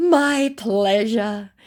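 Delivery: slow, smug put-on scammer voice.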